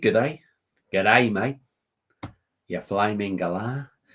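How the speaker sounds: heavily applied, put-on Aussie accent. Describing a video to listeners, the speaker retells a greeting in an Aussie accent. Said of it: "I love whacking into a bit of Aussie accent".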